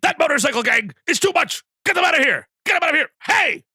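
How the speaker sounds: very high, shrill, loud anime commander shout. Auditioning for a voice actor, asked for an anime voice: anime general voice. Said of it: "those little voice efforts".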